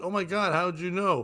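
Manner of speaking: ordinary delivery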